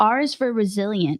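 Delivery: ordinary talk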